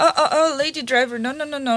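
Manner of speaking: normal talking voice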